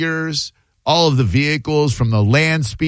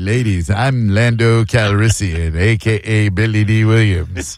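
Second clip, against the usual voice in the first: slow, laid-on, flirtatious lady-killer delivery; 6 semitones lower than usual. Imitating the lady-killer Lando from the old movies: Billy Dee Williams as Lando impression. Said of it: "He's like".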